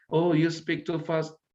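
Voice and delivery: ordinary talk, nothing marked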